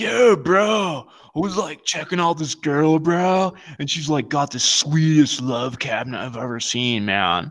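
surfer dude voice. Imagining how a surfer dude would tell the story, surfer dude voice. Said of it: "it's gonna be like a surfer".

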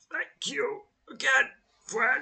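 put-on croaky old man voice, very high. Narrating an old man calling out of the dark to the listener, croaking old man voice. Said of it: "croaks the voice of the old man".

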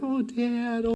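put-on very soft, high, hushed, wheedling, gentle kid voice. Describing kids asking their father for camp money: imitating a sweet-talking kid. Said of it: "they change their voice".

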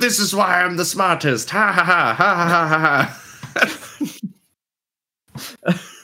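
shrill, smug, gloating cartoon-villain laughter, high. Asking whether a serious trash-talker is like Mandark, then doing the Mandark gloating villain laugh. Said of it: "is he like Mandark? He's like".

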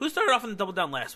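voice breaking, cracking and pitching up. Asking the other host a question, voice cracking. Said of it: "my voice cracked".

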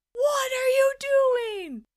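very high, stretched-out, drawn-out shriek. Retelling how the speaker screamed at him as he drew scribbles: retelling own screaming. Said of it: "And I'm screaming".

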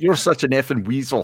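put-on, heavy Eastern European accent. Imitating a player calling a reporter a weasel: imitating Voracek's European accent. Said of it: "that European accent that he has".

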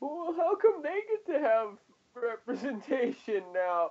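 very high, swooping, whiny, crying voice. Ranting about complainers on the internet, the speaker mocks them with whiny crying. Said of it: "just fucking crying and going".

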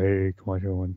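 baritone voice. On a show, someone who is usually a tenor tries a baritone voice. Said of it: "I'm gonna do more of a baritone".

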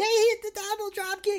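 commentator-style high scream. Retelling how the commentator called the double drop kick: imitating Caprice screaming. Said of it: "he's screaming".

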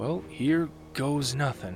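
soft high murmur. The character checks his backpack once more before going, murmured. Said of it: "Ludo murmured".

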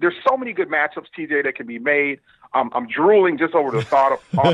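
ordinary delivery

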